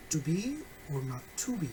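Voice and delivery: final BE stressed, run off fast. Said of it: "if we decided to stress the last word".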